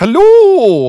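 loud, high put-on Scottish accent. Greeting the podcast listeners in a joke voice: Alan from AMD Tales accent. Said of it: "picked up an accent when I went to Scotland".

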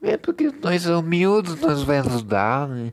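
put-on, high, swooping, stuck-up, snobbish rich voice. Mocking an arrogant type of rich person: put-on snobbish rich person voice. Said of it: "Essa voz assim".

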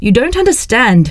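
fed-up outburst. Urged to explain, Norbert cries out in an exasperated cry. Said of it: "cried Norbert, exasperated".

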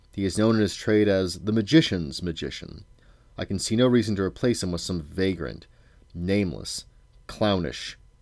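ordinary delivery

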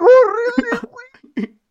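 mock, very high, shouted. Retelling how a parent yelled at the daughter when the window fell: retelling a yell. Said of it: "le gritó a la hija".

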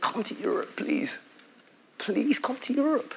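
pleading, imploring, earnest begging call. Retelling the Macedonian man's plea to Paul: imitating a begging plea. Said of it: "the scripture says he begged".

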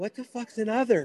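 small, meek, timid voice. Retelling what he asked a man gripping his neck, imitating speaking meekly. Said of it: "real meekly".

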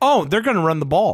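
normal talking voice

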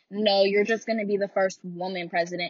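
ordinary delivery

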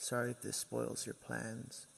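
raspy, creaky, rough, gravelly witch voice. A woman talks in her sleep to the narrator, low gravelly witch-like voice. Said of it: "It was much lower and gravely, ... It was the same low and gravelly voice. It sounded like a witch".

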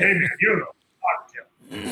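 put-on cliché, cheesy movie tough-guy gangster voice. Explaining what he does not mean, mocking a cheesy movie gangster voice. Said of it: "in the cheesy movie way, like gangster".

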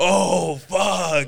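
very high, loud, panicked moan. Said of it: "it could sound like that".

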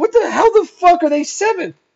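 sarcastic, angry laughter. Recalling writing her notes: retelling an angry, sarcastic laugh. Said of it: "laughing, but in an angry way and sarcastically".

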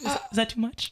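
sweet, high, innocent, angelic little voice. Retelling a scene where a girl checks on her partner: imitating a sweet little angel voice. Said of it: "the sweet little angel voice".

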